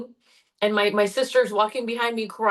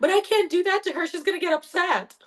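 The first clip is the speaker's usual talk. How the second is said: put-on crying little kid voice, high and teary; 8 semitones higher than usual. Retelling answering mommy as a crying child: retelling own childhood crying. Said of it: "And I'm crying, like, snot and everything".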